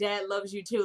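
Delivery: ordinary delivery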